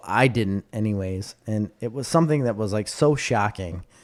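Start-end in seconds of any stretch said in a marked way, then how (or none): none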